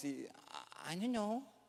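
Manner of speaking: put-on tiny, very soft child's voice, barely above a hush. Retelling what someone said, imitating their little voice. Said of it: "y así con su vocecita dice".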